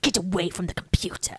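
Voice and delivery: put-on movie-style British accent, barked, commanding. Quoting the actor's line at the film's end, Jeremy Northam's British accent. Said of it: "His accent".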